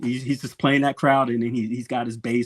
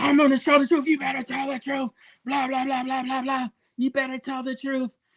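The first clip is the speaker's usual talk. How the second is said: mock shrill, very high, fast childish tantrum screaming; 13 semitones higher than usual. Describing a guest who came on a show, mimicking his childish screaming and yelling. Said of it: "he started screaming and yelling like a little child".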